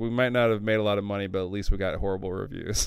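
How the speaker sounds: normal talking voice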